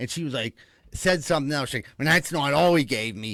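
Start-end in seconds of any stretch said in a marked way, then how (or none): 2.0-3.3 mock loud stage whisper. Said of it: "whispers but doesn't whisper".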